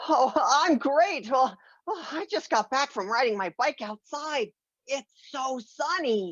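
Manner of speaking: winded, panting, breathless chatter. Greeting an aunt just back from riding a bike outside: out of breath. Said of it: "that's why you sound like you're out of breath".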